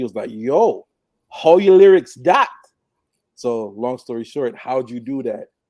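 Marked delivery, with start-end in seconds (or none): 0.3-2.5 very loud, high-pitched best-attempt Jamaican accent. Retelling what an uncle said on the bus: imitating an uncle's best jamaican accent. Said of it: "he said it in his best Jamaican accent".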